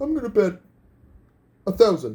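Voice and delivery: cartoon sitcom dad voice with swooping, swinging pitch. Asked by the host, a contestant gives his wager in the Homer voice. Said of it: "wager in the Homer voice".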